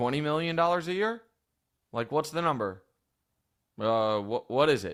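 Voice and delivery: ordinary talk, nothing marked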